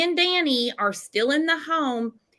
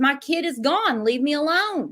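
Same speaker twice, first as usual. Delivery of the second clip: ordinary delivery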